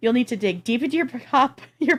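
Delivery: talking through laughter. Reading a news item aloud, laughing while talking. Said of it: "I'm laughing because of my reaction".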